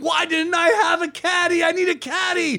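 put-on screaming. Retelling a dream of being on the street, imitating someone screaming. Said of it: "I'm on the street screaming".

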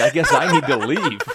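loud, laughing, sheepish voice.

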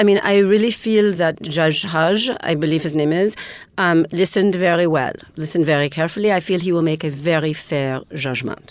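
put-on French accent. After another speaker asks for french accents, speaking in a french accent. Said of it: "I absolutely will talk in a French accent".

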